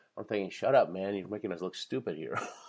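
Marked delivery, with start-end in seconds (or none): none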